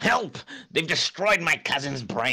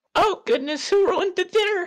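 put-on very high-pitched elderly woman voice. Playing the grandma in a group scene, answer the other player in an old lady voice. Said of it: "I can't do this old lady voice".

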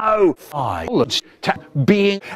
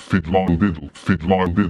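eerie, very low, spooky, ghostly drone; 9 semitones lower than usual. Swinging a comic in front of a two-year-old, he starts talking: spooky voice. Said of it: "He starts talking in his spooky voice".

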